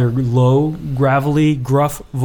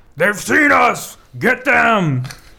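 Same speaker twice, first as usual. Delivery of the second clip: gravelly, high, rough voices crying in alarm; 8 semitones higher than usual. Narrating a game, voice several voices crying out in alarm, rough and gravelly. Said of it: "several of these rough, gravelly voices cry out in alarm".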